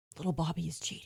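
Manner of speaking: near-silent, soft, secretive whisper. A girl in the scene tells her partner a secret, in a silent whisper. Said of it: "She'll silently whisper to her partner".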